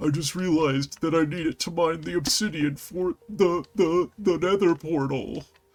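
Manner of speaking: high-pitched, frightened man's voice. Narrating a gameplay session, doing an impression of a scared guy. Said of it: "That's my impression of a scared guy".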